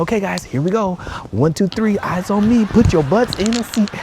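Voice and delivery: put-on bubbly teacher voice. Retelling their first try with the class, imitating own fake high-energy voice. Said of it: "I tried to go with the high energy".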